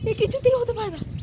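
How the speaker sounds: shocked, disbelieving tone.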